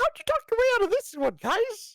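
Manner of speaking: very high-pitched cartoonish voice. Speaker wonders how two people escaped charges, in a Mickey Mouse voice. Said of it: "I know I'm doing the Mickey voice".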